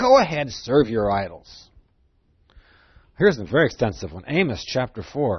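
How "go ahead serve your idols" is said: sarcastic delivery. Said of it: "He's speaking sarcastically".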